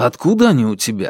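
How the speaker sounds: usual speaking voice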